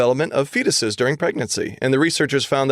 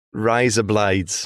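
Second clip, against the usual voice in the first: put-on Australian accent, much lower; 4 semitones lower than usual. Showing how a British phrase sounds when said in an Australian accent. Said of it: "razor blades in an Australian accent".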